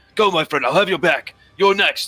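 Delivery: eager, excited, high pep-talk cheering. Game master voicing two characters pepping each other up, excited cheering. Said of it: "they kind of excitingly cheer for each other".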